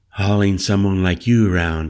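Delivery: ordinary delivery, nothing marked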